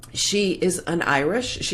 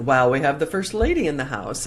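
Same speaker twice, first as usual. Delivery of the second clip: plain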